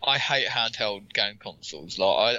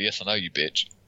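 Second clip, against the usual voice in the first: mock catty snippy tone; 2 semitones lower than usual.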